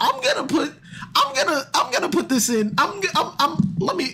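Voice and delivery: high stuttering voice, stammering false starts at the opening. Speaker trips over their words while talking, stuttering. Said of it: "I'm stuttering".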